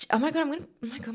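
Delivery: tearful, choked-up voice, very high pitch. Remembering grieving the sale of an old car: tearing up. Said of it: "my eyes are tearing up".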